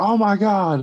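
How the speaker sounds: mock very high yelled outburst. Recalling watching a trailer in the bathroom at a party, retelling a yell. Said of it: "I yelled out".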